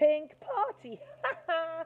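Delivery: teasing, loud, high hooting laugh. Reading a story, a character jeers at another's pink-party invitation, hooting. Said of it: "hooted Darren".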